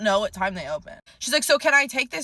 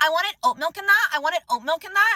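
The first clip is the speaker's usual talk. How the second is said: put-on, complaining, high-pitched yelling; 7 semitones higher than usual. Telling about a coffee customer, imitating her yelling over the bar. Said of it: "she's like yelling over the bar".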